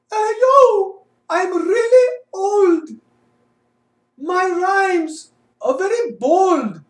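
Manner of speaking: light put-on Indian accent, pitched very high. A performer in a comedy bit delivers a rhyming line in a slightly Indian-sounding accent. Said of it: "doing a little bit more Indian".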